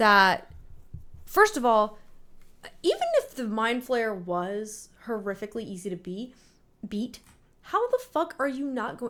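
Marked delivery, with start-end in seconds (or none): 2.8-9.1 increasingly agitated, worked-up rant with swooping pitch. Complaining that a show never explains its monster, getting worked up. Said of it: "let me calm down".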